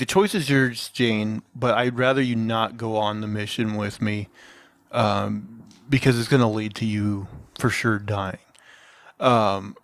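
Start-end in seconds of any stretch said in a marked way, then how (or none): none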